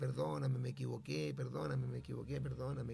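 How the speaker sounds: plain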